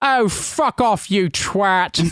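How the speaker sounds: very slow, high dismissive voice. Retelling a traffic argument, quoting the other man's reply in an Alan Partridge voice. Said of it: "basically Alan Partridge voice".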